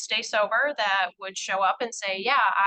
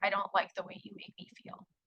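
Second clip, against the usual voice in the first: put-on tiny voice, much quieter; 10 dB quieter than usual. Speaker quoting a woman's reply to the county attorney, imitating a tiny small voice. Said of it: "in the smallest voice I've ever heard".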